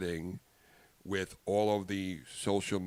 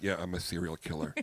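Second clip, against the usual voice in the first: put-on tired, serious tone, lower; 2 semitones lower, 3 dB quieter than usual. Retelling his answer to a man who questioned him, retelling a tired, serious answer. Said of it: "I was tired and very serious".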